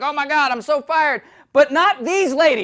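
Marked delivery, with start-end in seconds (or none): 0.0-1.2 rigid, stiff newsreader voice with audible panic. Describing news anchors who screw up: imitating a stiff, panicked anchor. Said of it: "get all stiff, like".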